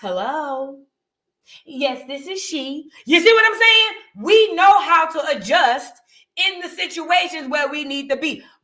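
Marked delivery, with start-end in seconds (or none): 0.0-2.9 slow, polite, proper phone voice. Imitating a mother answering a bill collector's call: imitating mom's polite phone voice. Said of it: "our mama had the phone bill paying voice".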